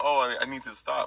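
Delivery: normal talking voice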